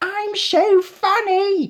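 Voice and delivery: high, shrill, loud screamed delivery. Retelling a lad dabbing across the road, imitating a scream. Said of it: "he just screamed".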